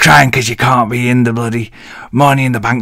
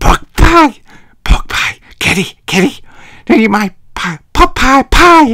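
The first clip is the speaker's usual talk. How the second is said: put-on cartoon kid voice, higher; 12 semitones higher, 4 dB louder than usual. Recapping a wrestling show, then attempting a Cartman impression. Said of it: "Can't do a very good impression of Cartman".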